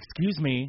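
high, loud, snarky delivery. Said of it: "all, like, snarky".

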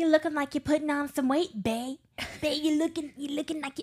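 put-on Cajun grandmother voice. Describing grandma forcing food on them, then quoting her in a Cajun grandma accent. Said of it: "This is my Cajun grandma accent".

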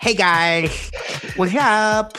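put-on high girl voice talking with braces. Describing a girl who wore braces, imitating a girl with braces. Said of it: "She talked like this".

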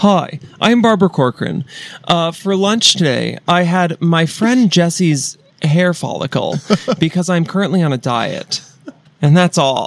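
slow, machine-like voice, part robot, part woman. Showing how she should talk in your mind, do Barbara Corcoran as part computer, part woman. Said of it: "Part computer, part woman".

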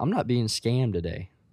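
put-on under-breath muttering. Retelling refusing a woman who is leaving, retelling an under-breath mutter. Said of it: "under my breath".

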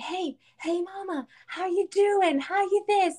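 mock man voice, high, drawn-out hollering. Retelling a man yelling at the speaker across the cars, imitating a man yelling. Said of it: "and he's yelling at me".

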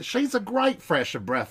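sudden switch to Australian accent, very high pitch. Speaker talking with another person, slipping into an australian accent. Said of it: "that was going very Australian for a second".

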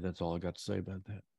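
ordinary delivery

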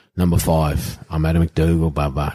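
ordinary delivery

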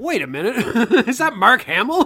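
very loud, startled exclamation. Retelling a movie surprise, retelling own surprised reaction. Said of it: "A wonderful surprise for me to be like".

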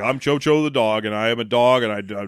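put-on bored dog voice. Mocking a voice actor phoning it in from a recording studio, imitating bored phoned-in voice acting. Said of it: "He is equally bored as Eric Roberts".

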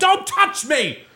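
very high, shaking, furious angry outburst. Retelling a woman snapping at a kid, imitating a furious woman. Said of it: "this woman's like shaking angry".

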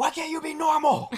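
very high, shrill yelled shout. Retelling how Amelia shouts back at Samuel on the drive home: imitating Amelia shouting. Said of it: "Amelia shouts back and she says".

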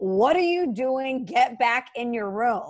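mock screaming. Retelling how a man turned and screamed at a child, retelling a scream. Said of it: "starts screaming".

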